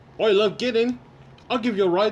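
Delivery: high-pitched, terrible put-on British accent. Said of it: "That's the most terrible British accent I've ever done".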